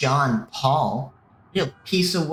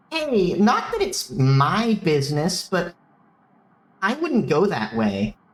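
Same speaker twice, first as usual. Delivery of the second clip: put-on full, swooping Valley girl voice; 4 semitones higher than usual. Taking a turn narrating, voicing a woman's line in a valley girl voice. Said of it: "Valley girl".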